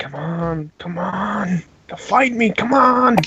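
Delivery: very slow muttering under the breath. Voicing a character who mutters at a silent radio: muttering under his breath. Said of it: "muttering under his breath".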